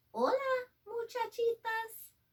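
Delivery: very soft voice. Narrator reading Skippy John Jones's line in a story, very soft voice. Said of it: "he said in a muy, muy soft voice".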